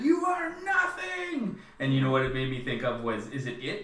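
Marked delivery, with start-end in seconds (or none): 0.0-1.6 shrill, very high-pitched scream. Recounting a scene where she starts screaming at it, retelling a scream. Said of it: "She starts screaming at it".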